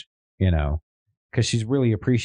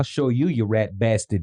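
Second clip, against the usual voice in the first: heavy, thick, put-on New York accent; 3 semitones higher than usual. Joking with a friend about how New Yorkers talk, in a thick New York accent. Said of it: "That that that New York accent".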